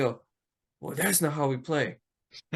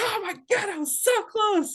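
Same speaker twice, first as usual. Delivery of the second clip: mock very high, shrill, frustrated yell carrying far. Recounting a game story, quoting a player's outburst across the field: retelling a loud yell. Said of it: "You can hear Houdini from the other side of the field".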